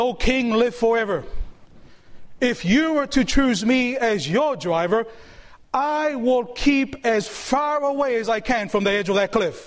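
normal talking voice

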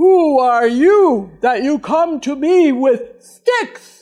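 very loud, slow, booming, furious giant voice. Storyteller voices a giant mad at a kid coming at him with a stick, angry giant voice. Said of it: "gets mad like that".

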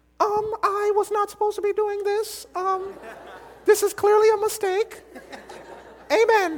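play-acted very high, trembling, nervous stammer. Acting out someone told they lead prayer week: imitating nervous stammer. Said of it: "some of you would start shaking".

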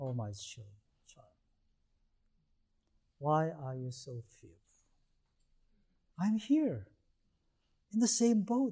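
gentle, compassionate, softly spoken. Acting out his counsel after the emergency: retelling kindly, with compassion. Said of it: "He had a compassion in his voice, kindly".

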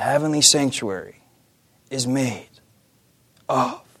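really slow, drawn-out, broken-up, halting hush. Quoting a man addressing an audience: retelling really slow speech. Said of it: "And he says really slow".

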